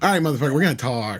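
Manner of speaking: mock sassy, catty attitude. Imitating the man in a played clip: imitating a bitchy attitude. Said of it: "there's a little bitch in his voice there".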